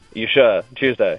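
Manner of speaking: mocking, sarcastic tone. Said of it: "The sarcasm".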